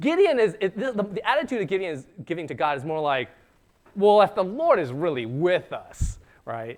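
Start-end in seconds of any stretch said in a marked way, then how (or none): 3.9-6.8 mock sarcastic, snarky, skeptical doubting tone. Paraphrasing Gideon's attitude toward God, in a put-on snarky, doubting tone. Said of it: "There's some snark in this".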